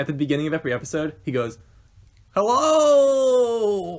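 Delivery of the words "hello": very high, stretched-out, long drawn-out, awkward delivery. Showing the episode opening greeting: imitating Jack's long drawn-out hello. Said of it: "really long and drawn out and uncomfortable".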